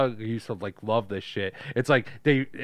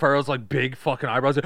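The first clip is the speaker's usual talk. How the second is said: plain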